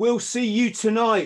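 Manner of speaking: put-on shout, very high and loud. Telling a story, quoting a guy who shouted at them, retelling his shout. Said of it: "And the one guy shouts".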